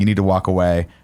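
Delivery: ordinary delivery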